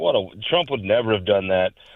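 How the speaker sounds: plain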